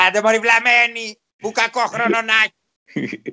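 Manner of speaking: high, gruff old-timer impression, yelled slow ending. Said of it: "Έχω στο μυαλό μου τέτοιο".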